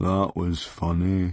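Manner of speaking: unbelievably mournful, doleful voice. Retelling another speaker's reaction to a speech: imitating an unbelievably mournful voice. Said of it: "an unbelievably mournful voice".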